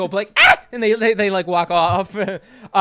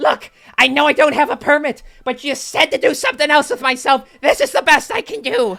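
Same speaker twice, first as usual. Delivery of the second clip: high-pitched goblin queen character voice; 7 semitones higher than usual. Voicing the ex-goblin queen, gone pale, explaining herself: ex-goblin queen voice. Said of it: "she turns pale... and she's like".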